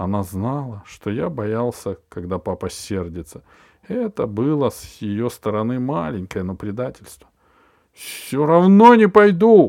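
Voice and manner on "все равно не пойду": outright yell, loud and high-pitched. Narrator reads a boy's outburst at his mother, shouted. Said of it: "Закричал я".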